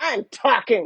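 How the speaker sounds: cutting, sharp dominatrix voice. Retelling how a woman answered a man with a camera, in a dominatrix voice. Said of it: "in that dominatrix voice that you know".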